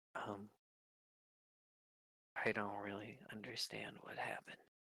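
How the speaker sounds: very quiet, kept hushed voice. Voicing a cleric who steps up to Cal after a meeting: speaking very quietly. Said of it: "very quietly goes".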